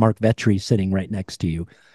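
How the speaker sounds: mock whispered voice. Retelling what the wife whispered at the bar: imitating a whisper. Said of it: "whispers in my ear, and says".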